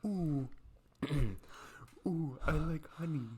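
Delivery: high cartoon bear voice. Taking a turn at doing a cartoon voice on request, in a Winnie the Pooh voice. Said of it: "Winnie the Pooh voice right now".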